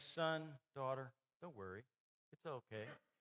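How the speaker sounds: gentle, soft, comforting, reassuring, soothing voice. Speaker imagines Jesus calming someone who worries, imitating a soft, comforting voice. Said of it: "his comforting, soft voice saying".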